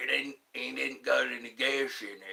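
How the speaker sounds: rough, creaky, rasping character voice. Answering a chat request to do Sling Blade: Sling Blade impression. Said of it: "My Sling Blade impression".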